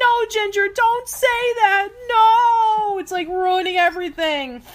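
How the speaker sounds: very high, embarrassed, pleading voice.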